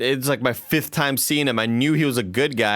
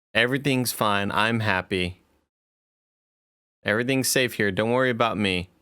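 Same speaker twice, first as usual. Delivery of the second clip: mock, forced-sounding reading from a script; 3 semitones lower than usual. Teasing the listener who sounds kidnapped, imitating reading from a hostage script. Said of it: "it sounds like you're reading from a script".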